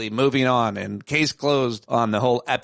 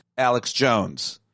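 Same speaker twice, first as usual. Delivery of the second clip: ordinary talk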